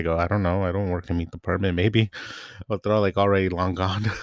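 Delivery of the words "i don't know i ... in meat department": muttering to self under breath. Retelling being asked about chicken, the speaker quotes what they said: retelling an under-breath remark. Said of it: "under my breath".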